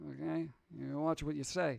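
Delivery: calm, hushed, rough, murderous mafia voice. Told they have a mafia voice, showing what a mafia voice is. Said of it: "This is my mafia voice".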